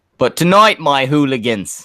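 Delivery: put-on British accent drifting into an Australian accent. A streamer starting a role-play with viewers, in a put-on accent that sounds Australian. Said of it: "I was unaware that you were Australian".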